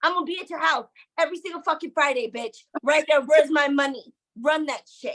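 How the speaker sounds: put-on livid, furious, angry ranting. Retelling what you told a woman who owed money, acting out a livid rant. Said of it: "I was livid".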